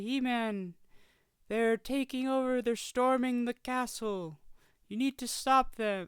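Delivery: high, faraway-sounding voice. Describing the Sorceress from He-Man, the speaker imitates how she talks: Sorceress voice, high and distant. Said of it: "She's very distant in a lot of her voice".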